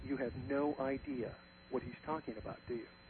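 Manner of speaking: whispered delivery. Retelling what a meeting member leaned over and asked him, whispering. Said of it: "And he whispers".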